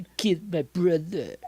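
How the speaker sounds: very drawn-out, slow, hushed put-on Eastern European accent. Discussing a sitcom-style show, quoting a character in an eastern european accent. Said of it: "very Eastern European accent".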